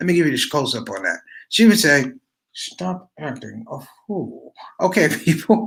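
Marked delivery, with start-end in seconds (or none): 2.5-4.5 very quiet, creaky, slow speech through gritted teeth. Retelling how a woman scolded a boy who did wrong: imitating talking through teeth. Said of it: "she would say it like through her teeth".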